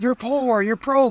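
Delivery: mock blunt, high-pitched hollering. Quoting what he says to the camera: imitating his own yelling. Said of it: "I'm fucking yelling at the camera".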